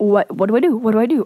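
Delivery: panicked, frantic, freaked-out babble. Retelling realizing the father is coming home: retelling own panicked words. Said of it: "I was freaking out".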